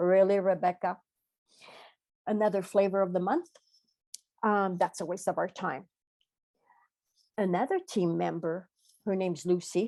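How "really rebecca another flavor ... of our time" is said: ordinary talk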